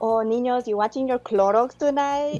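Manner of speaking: imitated Colombian-accented English. Retelling what mom says on Saturday nights: imitating mom's Colombian accent. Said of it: "So she's like".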